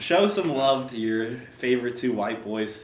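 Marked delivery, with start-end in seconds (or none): none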